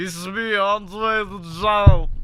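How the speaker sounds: voice sounding about to swallow its tongue. Showing how Andre the Giant really sounded: Andre the Giant impression. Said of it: "Andre was like".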